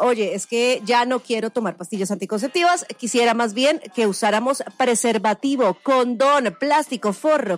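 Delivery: plain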